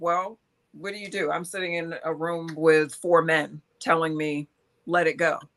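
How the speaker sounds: ordinary delivery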